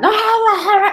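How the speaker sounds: play-acted shrill, heated yelling, very high and repeated. Retelling how the intensive care doctor yelled during an argument: imitating someone yelling. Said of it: "el intensivista gritaba".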